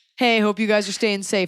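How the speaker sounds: hollow, dumb salesman bro voice. Speaker mocking people who are there to sell you something, doing an impression of a shitty guy. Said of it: "doing an impression of a shitty guy".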